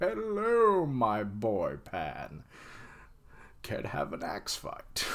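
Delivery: slow, breathy put-on captain voice.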